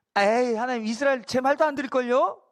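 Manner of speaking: lightly snide, dismissive, mildly sarcastic, mocking tone. Retelling someone's refusal, the line in a mock mildly sarcastic tone. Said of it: "좀 이렇게 막 약간 비꼬면서".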